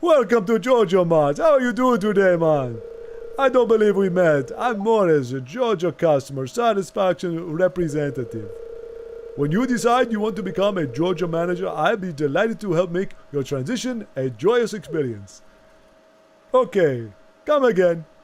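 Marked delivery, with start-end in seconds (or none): 0.0-15.4 put-on vampire voice. Voicing a shop character, trying for a Dracula voice.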